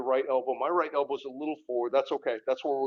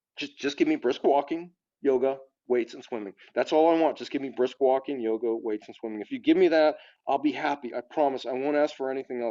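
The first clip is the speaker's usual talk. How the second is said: ordinary talk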